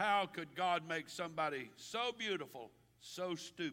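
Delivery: ordinary delivery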